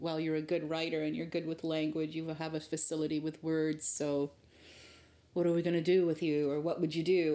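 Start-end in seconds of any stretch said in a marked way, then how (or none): none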